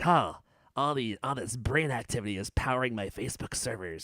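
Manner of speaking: put-on creepy, smirking voice. Looking at a photo, mimicking Zuckerberg's creepy smirk: imitating Zuckerberg with a creepy smirk. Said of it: "this really creepy, um, smirk on his face".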